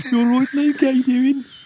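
put-on Birmingham accent. Imitating the audiobook's pilot Wedge: Wedge in a Birmingham accent. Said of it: "We're from Birmingham".

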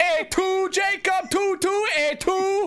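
put-on Italian accent. Joking with friends about a cartoon title as a call-center greeting, mock Italian accent. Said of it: "It sounds Italian to me".

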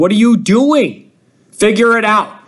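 acted-out shouting. Recalling people in her section at a Virginia game, imitating people yelling. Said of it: "there are people yelling".

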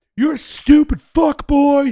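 put-on angry yelling. Retelling shouting at a driver from outside the car window: imitating own angry yelling. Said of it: "I got way too fucking angry".

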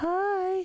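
very high, squeaky, drawn-out voice. Answering a request to try a high voice: high-pitched voice. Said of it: "how high can your voice go?".

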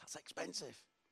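hushed, very quiet voice. Talking about an expensive car, talking quieter. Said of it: "We go a bit quieter".

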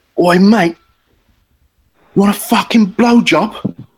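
high, drawn-out shout. Retelling how a swaying stranger on the pavement shouted at the speaker, retelling a stranger's shout. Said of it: "And then he just shouted".

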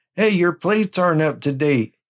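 high-pitched yelled call-out. Describing a driver in traffic shouting out his window at somebody, retelling a yell. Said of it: "he was yelling at somebody".

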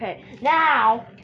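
deliberately loud.

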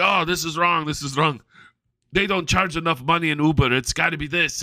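halting broken English. Recounting people who overcharged them for a drive, imitating broken English. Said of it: "And with broken English".

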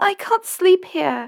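very high, little squeaked-out voice. Narrator reads a character's nervous reply, squeaking. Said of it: "Yvette squeaked".

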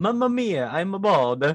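exaggerated fake Italian accent. In an accent guessing game, trying out the chosen accent; italian accent. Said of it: "An Italian accent would make it awesome".

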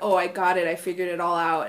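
normal talking voice

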